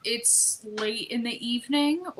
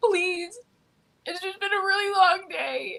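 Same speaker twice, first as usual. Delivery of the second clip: put-on tearful crying voice, pitched up; 9 semitones higher than usual. Playing a part in a planned phone scene, using a fake crying voice. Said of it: "Like a crying voice".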